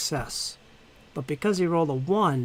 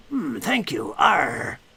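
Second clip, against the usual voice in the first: put-on slow, drawn-out pirate voice; 2 semitones higher, 3 dB louder than usual. Voicing a healed dwarf who thanks the party: pirate voice. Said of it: "Another pirate dwarf".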